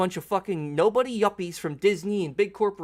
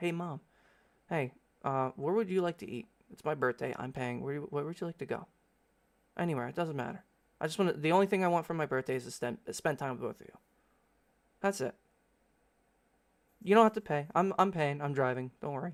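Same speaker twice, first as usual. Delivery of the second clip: gentle, very calm, soft voice; 4 semitones lower, 7 dB quieter than usual. Retelling what they said to their mom about a birthday meal, very calm tone. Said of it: "I was talking in this very calm tone".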